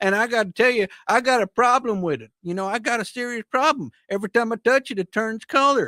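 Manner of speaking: put-on Southern accent, very high-pitched and loud. Acting out someone's words in a story, southern accent. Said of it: "that's the best Southern accent you've ever done".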